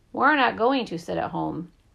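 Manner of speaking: usual speaking voice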